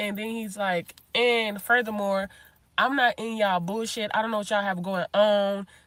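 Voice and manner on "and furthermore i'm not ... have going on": usual speaking voice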